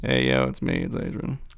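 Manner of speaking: very deep, creaky, rough put-on voice. Asked to pretend to be Adrian real quick, do an Adrian impression. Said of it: "can you pretend to be Adrian real quick".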